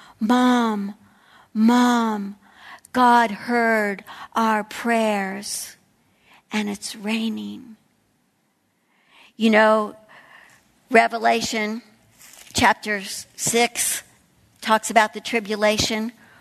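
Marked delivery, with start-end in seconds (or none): 0.2-7.8 put-on slow, drawn-out small child's voice. Retelling hearing a child's voice when rain came: imitating a little child's voice. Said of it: "I could hear a little child's voice saying".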